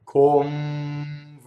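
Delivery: slow, exaggerated convegno, lip on teeth at n. Showing the word slowed down to reveal the lip movement: slowed down, exaggerated. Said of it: "If I slow that down".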